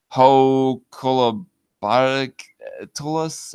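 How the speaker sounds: very slow, halting, stumbling sounding-out of a hard word.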